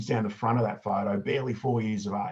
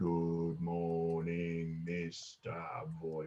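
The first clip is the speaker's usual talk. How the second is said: gravest somber tone, low, hushed, very slow, drawn out; 4 semitones lower, 8 dB quieter than usual. Showing how pupils must answer a primary school principal's good morning: most somber tone. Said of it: "in the most somber tone you can muster".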